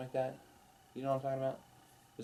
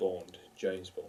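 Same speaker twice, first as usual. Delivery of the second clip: rough, put-on attempt at a British accent; 5 dB quieter than usual. Joking about trying out to play James Bond: put-on British accent. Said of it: "I have to work on my British accent".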